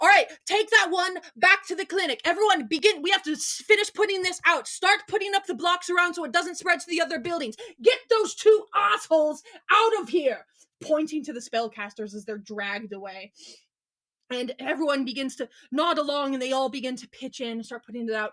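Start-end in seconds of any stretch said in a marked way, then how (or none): 0.0-10.5 loud, high-pitched yelling, barking delivery. The town's guardian orders bystanders around by a burning building, yelling orders. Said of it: "as he turns to yell to everyone".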